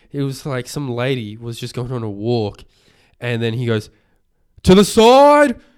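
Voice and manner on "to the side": shrill, very loud, high-pitched yelling. Retelling a runner calling to a walker across the road: imitating someone yelling. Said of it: "he didn't need to yell that".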